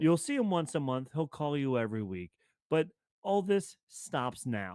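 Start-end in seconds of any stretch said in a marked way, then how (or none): none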